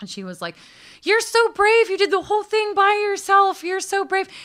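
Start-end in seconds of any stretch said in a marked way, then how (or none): 1.0-4.3 very high, loud, gushing admiration. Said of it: "she has this high-pitched little voice".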